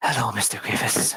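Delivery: sultry, sensual voice. Retelling a movie character's greeting at the front door: imitating a sensual greeting. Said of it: "She says a very kind of sensual".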